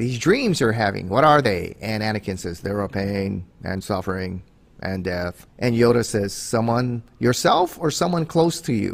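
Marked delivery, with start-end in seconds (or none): 2.6-5.5 put-on monotone, lower pitch and quieter. Retelling a scene where Anakin answers Yoda, in an Anakin Skywalker monotone voice. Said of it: "Kind of monotone kind of guy".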